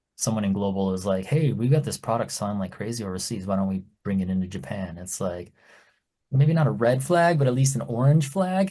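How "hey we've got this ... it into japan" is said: plain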